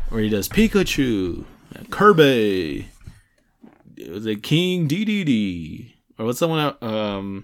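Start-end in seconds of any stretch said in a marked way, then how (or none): 0.5-5.9 much slower put-on announcer voice. Imitating the announcer introducing the game's characters, announcer voice. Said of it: "the announcer voice".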